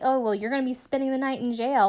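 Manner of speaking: put-on, high, needling, goading, mocking jeer. Retelling how a cop spoke to an arrested man: imitating someone taunting. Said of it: "she taunts the guy through the window".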